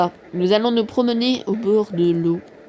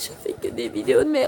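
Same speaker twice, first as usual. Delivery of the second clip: high fake sobbing mixed with laughter. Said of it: "je vais vraiment pleurer".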